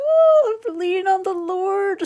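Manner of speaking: high, loud, slow, cutesy pious voice. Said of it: "a cutesy, like".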